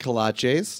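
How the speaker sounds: the word kolaches pronounced Spanish-style. Telling about eating since arriving in Houston: Spanish accent on 'kolaches'. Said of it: "Which I keep saying with a Spanish accent".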